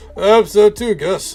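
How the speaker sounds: put-on drunk voice. Voicing Philip answering Gus, in a Philip drunk voice. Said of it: "it's my Philip drunk voice".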